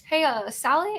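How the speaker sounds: curious, inquisitive tone with rising pitch. Demonstrating how to open a conversation cold, in a curious tone. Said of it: "Noticing my my tone is more curious".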